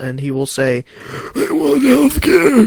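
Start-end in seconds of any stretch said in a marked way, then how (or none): 1.3-2.7 put-on old man voice, very high. Quoting what a politician will say, speaker uses a put-on old man voice. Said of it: "That was just my old man voice".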